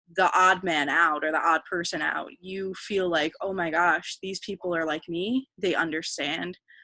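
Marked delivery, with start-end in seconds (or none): none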